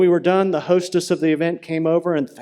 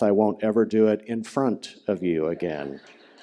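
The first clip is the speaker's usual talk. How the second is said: put-on mutter under breath, lower pitch; 8 semitones lower, 4 dB quieter than usual. Retelling a reply to Mom after a request: retelling muttering under breath. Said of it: "added under my breath".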